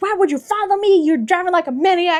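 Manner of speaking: high-pitched, sassy, shouted yell. Retelling a book scene where she confronts a driver: imitating her yelling. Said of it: "She's yelling at him".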